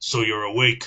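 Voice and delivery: rough, gruff put-on voice. Reading a story aloud, a character's line: gruff character voice. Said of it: "I'm gonna do a voice. ... a gruff voice intoned".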